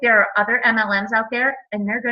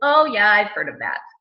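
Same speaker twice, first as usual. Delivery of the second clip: put-on dismissive, unimpressed tone. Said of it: "they kinda get that tone".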